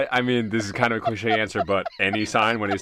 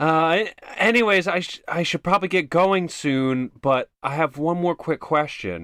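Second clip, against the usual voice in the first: very loud, jarring, pitched-up voice; 8 semitones higher than usual. Speaking in character so people in the hallway overhear: jarringly loud. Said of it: "jarringly loudly, so that they can hear me".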